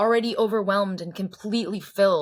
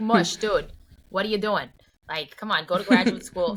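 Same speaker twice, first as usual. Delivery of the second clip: talking like a Boston local. Imitating people in Boston, in a Boston accent. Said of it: "that's my Boston accent".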